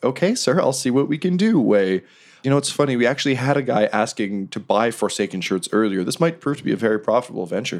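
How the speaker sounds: courteous, polite customer-service voice. A character replies to a man's request, in customer service voice. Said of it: "in the most like customer service".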